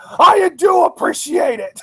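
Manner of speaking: high, furious, angry screaming voice. Retelling how he still tried to thank Stephanie: mock-angry screaming. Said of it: "screaming in his angry voice".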